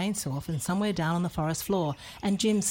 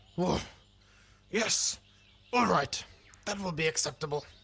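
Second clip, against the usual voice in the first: softened, slightly growly bear voice. Narrator reads a papa accepting an offer to fix a rocker; not-so-growly voice. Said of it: "said Papa Kay in a not-so-growly voice".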